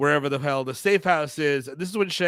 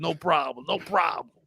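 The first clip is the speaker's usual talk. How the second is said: put-on robot guy voice, quieter; 4 dB quieter than usual. Retelling a movie scene, foul-mouthed Cabal impression. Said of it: "Cabal's like".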